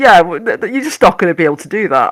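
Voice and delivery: dry, mocking, really sarcastic, stumbling with false starts. Imitating his reply when asked to try something: imitating a sarcastic reply. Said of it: "it's just really sarcastic".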